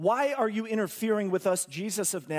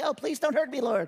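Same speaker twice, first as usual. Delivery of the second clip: mock wimpy, whimpering, pleading demon voice; 6 semitones higher than usual. Speaker mocks how demons talk, imitating a wimpy pleading voice. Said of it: "See how wimpy they are?".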